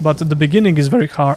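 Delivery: voice cracking and breaking. Talking about starting out making videos, voice cracking. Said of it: "my voice is cracking".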